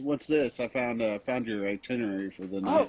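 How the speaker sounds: ordinary delivery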